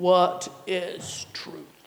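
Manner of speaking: gruff, menacing sci-fi villain voice. A speaker urges listeners to try Pilate's question gruffly: Darth Vader voice. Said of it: "try your Darth Vader question".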